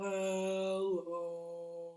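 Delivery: very low, deep, soft, drawn-out voice. Leading a group in a hello game, as low as possible. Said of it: "say hello as low as we can".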